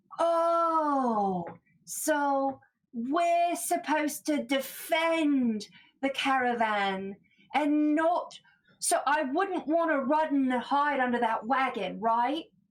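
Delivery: slow, thick, heavy, laid-on sarcasm. Voicing a character who mocks a warning about defending the caravan: heavy sarcasm in character. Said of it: "leans heavy into it and is like".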